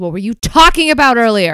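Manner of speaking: loud, angry in-character yell. Voicing a character who yells while swinging a sword: yelling in character. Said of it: "she yells".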